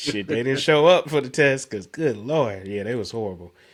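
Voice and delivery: ordinary delivery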